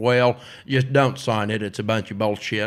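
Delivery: put-on Southern accent, male voice. Speaker imitates his dad, now his lawyer, giving legal advice: put-on Southern accent. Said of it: "I just do his accent".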